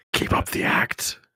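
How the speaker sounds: whispered, in a put-on voice. Playing Doe, who whispers back to a companion: whispering in character. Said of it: "Doe whispers back".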